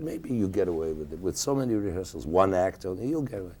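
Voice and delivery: normal talking voice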